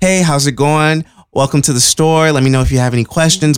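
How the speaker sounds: polite, customer-service retail register voice. Retelling greeting a customer while code switching at work: imitating own polite retail greeting. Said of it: "I code switch all the fucking time".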